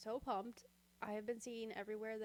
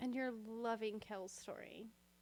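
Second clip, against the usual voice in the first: mocking sarcastic tone. Teasing a co-host who hates a book character: sarcastic. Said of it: "You said that sarcastically".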